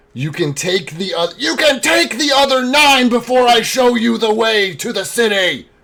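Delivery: very high, loud, full-throated yell. Voicing a captive who defies her interrogators: yelling loudly. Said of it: "she yells quite loudly".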